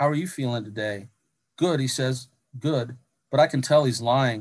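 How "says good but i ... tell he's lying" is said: ordinary delivery, nothing marked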